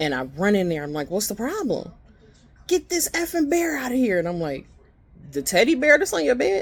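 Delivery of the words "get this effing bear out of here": very high, shrieking, terrified scream. Retelling a woman screaming out of nowhere, imitating her screaming as if attacked. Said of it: "she's screaming as if someone is attacking her".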